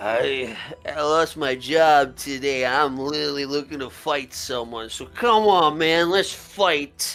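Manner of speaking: put-on drunken elf character voice. Voicing a drunk elf who wants to fight a player: drunk elf guy voice. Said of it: "some drunk elf guy looks at you, says".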